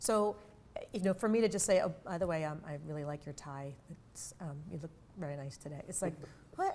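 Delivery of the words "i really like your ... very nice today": hesitant, very quiet, dull flat monotone. Demonstrating a compliment about a tie delivered in a flat monotone. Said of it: "A little monotone. / when I deliver it like that".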